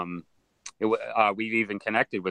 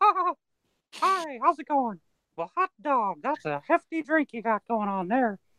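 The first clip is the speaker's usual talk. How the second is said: very high cartoon voice, pitch swooping and swinging. After drinking, doing a drunk Mickey Mouse voice. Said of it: "now I gotta hear your Mickey Mouse voice".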